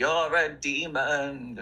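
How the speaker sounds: the word demon stretched long. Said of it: "I could just see [name] being like".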